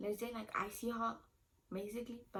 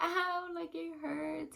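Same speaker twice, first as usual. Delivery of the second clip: high, loud, drawn-out scream of agony; 8 semitones higher, 5 dB louder than usual. Retelling the epidural and contractions: imitating own pained screaming. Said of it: "I was literally screaming".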